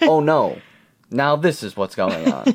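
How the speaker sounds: emotionless, flat voice. Imitating the movie character Tom, who speaks without emotion: emotionless Tom imitation. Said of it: "there's no emotion behind what he says".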